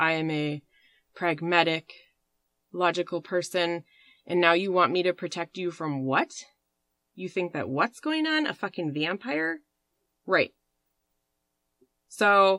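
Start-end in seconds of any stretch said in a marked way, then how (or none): none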